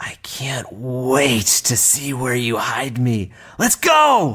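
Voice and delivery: whispered voice of a stone. A game narrator voices a stone speaking to two players: whispering stone. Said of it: "the stone whispers to both of you".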